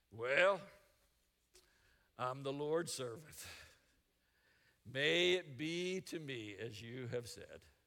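mock reluctant tone. Acting out someone answering God's call, mock-reluctant. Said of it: "Not happy about it, not excited about it".

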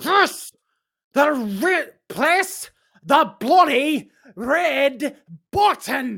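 high, fed-up, exasperated yelling with "red" stretched out. Telling someone who hesitates to press the red button, shouting. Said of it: "There's no reason to raise your voice".

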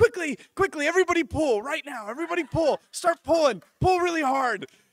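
shrill excited shouting, very high and very loud. Retelling how the pastor reacted to the money pulled down; acting out her excited urging. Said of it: "she's getting all excited".

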